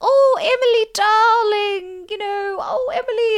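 put-on very high, drawn-out old lady voice, every word stretched. Describing a character who dresses Emily Gilmore: Miss Celine voice. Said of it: "a really old lady. And she's like".

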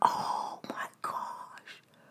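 soft, slow, stunned whisper.

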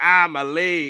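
high-pitched pained cry, cartoon background character voice. Imitating a wrestler lying hurt, like the dude on SpongeBob. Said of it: "like the dude on, um, on SpongeBob".

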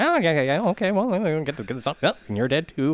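high, swooping, rambling running commentary. Imitating an off-screen voiceover in a movie: Popeye-like voice. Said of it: "It sounds like Popeye is, like, off screen".

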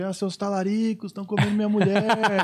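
put-on angry, accusing outburst in a man's voice. Retelling the man's shouted accusations at the group: imitating a man shouting accusations. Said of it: "Aí começou a gritar que a gente".

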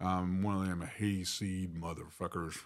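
put-on West Texas country drawl. Showing the group what his Texas accent sounds like: down home Texas accent. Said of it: "down home Texas kind of accent".

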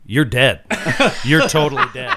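put-on flat, deadpan delivery. Recounting a game, the speaker quotes another player's reply; retelling a deadpan line. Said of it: "completely deadpan went".

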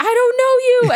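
shrill, very high, loud, panicked freaked-out shriek. Retelling a scene where a grandmother freaks out: imitating a freaked-out scream. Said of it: "freaks out and screams".

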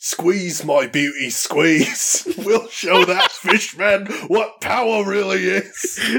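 shaky fake Cockney accent. Improvising a line for a Caught by the Kraken spoof, in a maybe-Cockney accent. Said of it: "Cockney, maybe?".

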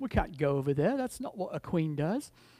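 terrible, bad, put-on British accent. Describing the Britishness of a story, in a terrible British accent. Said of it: "I got a terrible accent".

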